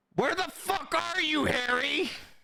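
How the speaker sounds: shrill shouting at a very high pitch. Voicing someone at the front of the store: yelling. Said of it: "someone yelling".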